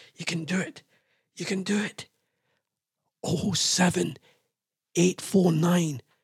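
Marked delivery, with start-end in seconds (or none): 3.3-6.0 hushed whisper. Radio host giving out the phone number while waiting for a caller, whispering. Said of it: "I don't know why I'm whispering".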